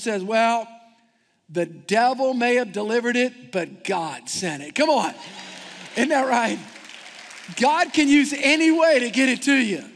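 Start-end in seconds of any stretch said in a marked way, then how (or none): 0.2-4.7 mock firm, unshaken, bold, confident tone. Retelling a woman answering the man who burst in: imitating a bold reply. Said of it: "She's responded very boldly".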